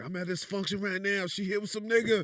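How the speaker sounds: mock mad-as-hell complaint, high and angry rant. Retelling a little brother's phone call, imitating an angry brother. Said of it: "he called me mad as hell".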